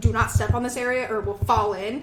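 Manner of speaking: ordinary talk, nothing marked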